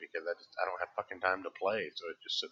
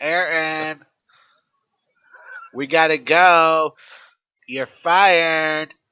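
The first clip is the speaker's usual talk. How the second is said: shrill, very loud, nose-held voice, stretched "go"; 10 semitones higher, 18 dB louder than usual. Asked whether you could do a whole show like this, demonstrate a nose-held Donald Trump voice. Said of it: "I will just hold my nose and talk like".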